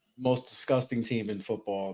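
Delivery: low, soft, unenthusiastic deadpan. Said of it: "Don't sound too excited".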